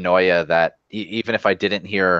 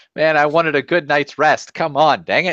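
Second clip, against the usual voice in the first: irritated, annoyed, pitched-up grumble; 8 semitones higher than usual. Getting dressed while being woken with news, acting annoyed. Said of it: "Badu's pissed".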